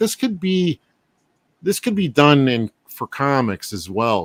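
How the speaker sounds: plain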